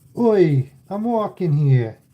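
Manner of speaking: put-on New York street accent. Saying a phrase again after saying it regular, New York accent. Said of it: "That's New Yorkie".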